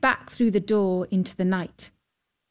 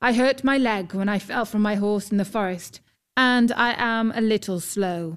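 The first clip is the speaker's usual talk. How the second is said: plain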